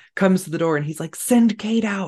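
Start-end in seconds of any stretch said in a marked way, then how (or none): 1.1-2.0 put-on whisper, higher. Retelling what the husband said at the door: imitating a whisper.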